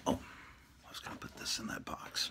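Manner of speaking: soft whisper, under the breath. Putting something into a box while the cats are sleeping: whispering. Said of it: "Why am I whispering?".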